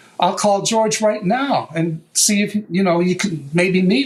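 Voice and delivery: ordinary talk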